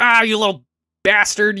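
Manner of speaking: acted angry outburst. Retelling how the windmill guy reacts in a game: imitating an angry windmill guy. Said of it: "he's always mad".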